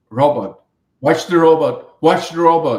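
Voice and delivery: put-on shouting. Retelling a south african friend warning them while they drive: retelling a friend shouting. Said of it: "he starts shouting".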